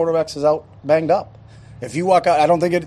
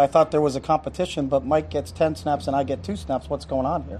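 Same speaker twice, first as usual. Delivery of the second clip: ordinary talk, nothing marked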